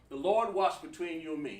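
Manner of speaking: ordinary talk, nothing marked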